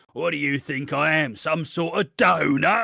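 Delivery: raspy, husky, rough voice. Quoting a line from Frank in the show: Frank's raspy husky voice. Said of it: "in his fucking raspy, husky voice".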